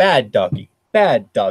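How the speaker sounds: thin, tinny, pre-recorded canned voice. Narrating a game scene, voicing a recording in a tinny pre-recorded voice. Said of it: "a pre-recorded tinny voice goes".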